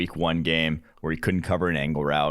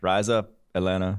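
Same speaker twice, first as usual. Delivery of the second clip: put-on flat, monotone voice. Quoting a coach's video about joining Atlanta: imitating Arthur Smith's monotone. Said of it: "the most monotone thing I've ever seen".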